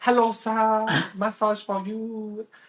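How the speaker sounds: very high, slow, drawn-out street tout voice. Retelling walking a street in Bali, imitating a Bali street masseuse. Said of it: "I sound so racist".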